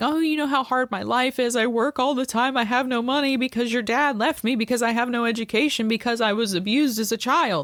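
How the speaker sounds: tearful, put-on sobbing. Retelling how the mother answered being confronted: imitating mother crying. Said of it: "My mother just started crying and saying".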